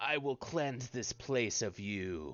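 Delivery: grumbling, undead skeleton voice. As a skeletal creature standing up and facing the players, grumbling. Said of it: "it like grumbles something in ancient Osirian".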